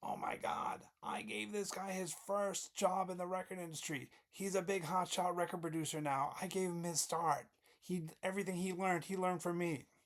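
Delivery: high, mock screaming voice, called out. Retelling how Norman spotted him at a conference: imitating Norman screaming. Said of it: "and he screams".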